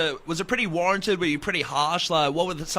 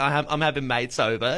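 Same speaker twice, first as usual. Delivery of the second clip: normal talking voice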